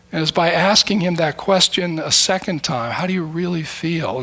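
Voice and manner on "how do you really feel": sincere, caring, genuinely concerned tone. Retelling asking a friend a second time: retelling a genuinely concerned question. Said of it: "in the tone of voice and the look of genuine concern".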